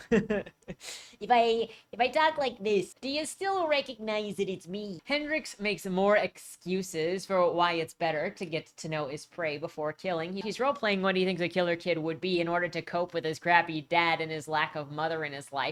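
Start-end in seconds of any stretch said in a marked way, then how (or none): 0.1-5.0 bad, weak, put-on Midwestern accent. Asking listeners if they still recognize the speaker, in a bad midwestern accent. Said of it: "it's not a very good Midwestern accent".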